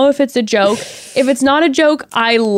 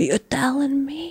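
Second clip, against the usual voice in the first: very quiet, hushed, close delivery; 2 semitones higher, 9 dB quieter than usual. Telling the other speaker they always say this line, imitating a super quiet delivery. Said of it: "you always say it super quiet".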